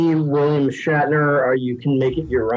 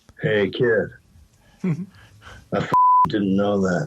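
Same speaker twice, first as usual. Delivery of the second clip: low, swooping put-on movie-star voice; 4 semitones lower than usual. Retelling what one actor said to another: Harrison Ford impression. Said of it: "like Harrison Ford".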